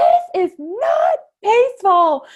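very high, loud, drawn-out shrieked scream. A mother retells giving birth: retelling a scream. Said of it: "I just screamed out".

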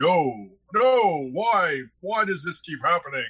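rough robot commander voice. Describing a figure crackling with lightning running around, in an Optimus Prime voice. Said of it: "in a voice that I'm going to attempt to approximate. Sounds almost like Optimus Prime".

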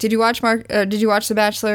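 ordinary delivery

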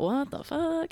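high, baffled inner voice.

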